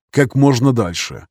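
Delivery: ordinary delivery, nothing marked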